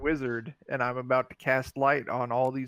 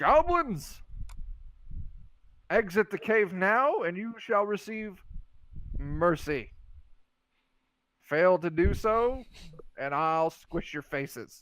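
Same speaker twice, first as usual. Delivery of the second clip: drawn-out, high-pitched calling out; 5 semitones higher than usual. Playing a character who warns goblins at a cave entrance: yelling into a cave. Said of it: "And I'm gonna yell into it".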